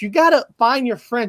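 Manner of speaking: ordinary talk, nothing marked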